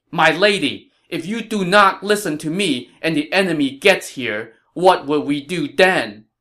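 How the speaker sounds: firm, forceful tone. Narrator reads a general pleading with a lady as the enemy nears: raised voice, stern. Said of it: "Zhao Yun raised his voice and said sternly".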